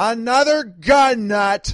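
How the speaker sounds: high, loud, slow call-out through a megaphone. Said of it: "she called out".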